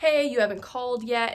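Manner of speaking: put-on playful, loud, flirty voice. Retelling a caller's opening line on the phone: imitating a flirty tone. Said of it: "he's being very flirty".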